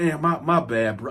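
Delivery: ordinary talk, nothing marked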